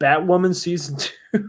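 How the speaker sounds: words breaking up into laughter. Asking viewers for their thoughts in the comments, laughing while talking. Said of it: "I can't even say it without laughing".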